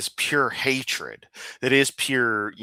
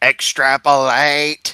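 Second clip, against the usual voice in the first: put-on robotic alien shout, louder; 7 dB louder than usual. Answering what a statistics Dalek would shout: Dalek voice. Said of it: "I can't do the Dalek voice in the best form".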